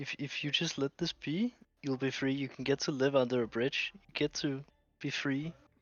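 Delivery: whispering. Speaking right into his ear while trying to convince him, whispering. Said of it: "I'm whispering in his ear".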